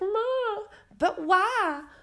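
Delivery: play-acted crushed, devastated pleading, very high pitch. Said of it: "he was just like".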